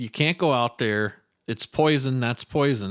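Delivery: ordinary delivery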